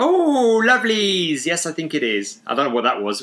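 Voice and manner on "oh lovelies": very high, loud, squeaky, oddly Scottish. Asking if this is the voice for playing Mrs Doubtfire, doing a weird Scottish Mrs Doubtfire voice. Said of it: "Kind of weird Scottish stroke".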